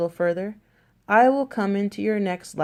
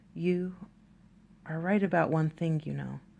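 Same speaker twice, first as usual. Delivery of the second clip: quiet, solemn, serious voice; 7 dB quieter than usual. Narrator reading a friendly soul turning serious with a little soul, quiet serious voice. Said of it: "said in a quiet voice".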